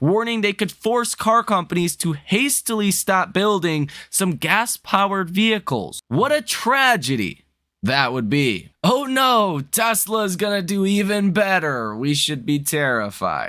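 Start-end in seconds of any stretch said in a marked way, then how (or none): 6.1-13.5 heavy, dripping sarcasm with swooping sing-song. Reacting to news that automakers may halt gas vehicles: sarcastic. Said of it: "I'm being sarcastic".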